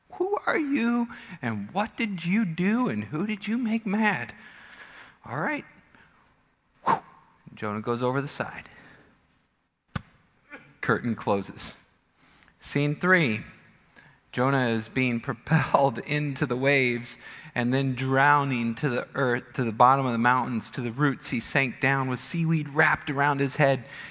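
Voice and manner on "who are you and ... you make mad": high, baffled, bewildered. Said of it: "These guys are like".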